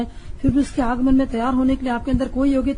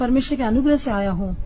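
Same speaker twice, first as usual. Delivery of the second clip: usual speaking voice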